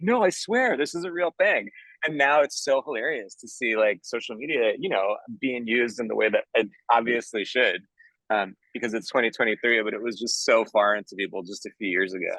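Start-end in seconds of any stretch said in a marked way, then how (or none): 0.0-1.7 high, earnest, pleading insistence. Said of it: "I would just be like".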